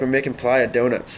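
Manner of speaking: ordinary delivery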